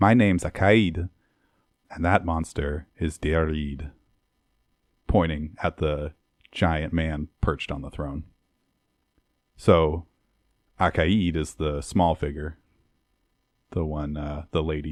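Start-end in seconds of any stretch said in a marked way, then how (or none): 0.0-3.9 put-on playful, fun Scottish accent. Voicing a figure stepping forward to introduce himself: fun Scottish accent. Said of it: "in a fun Scottish accent".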